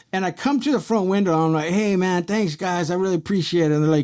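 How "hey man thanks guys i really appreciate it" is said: as friendly as can be, acted out. Retelling thanking the officers: retelling own super friendly tone. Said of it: "I was just as super friendly as you can get".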